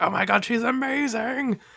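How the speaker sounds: put-on high, gushing, childlike cheer. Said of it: "we'd be like".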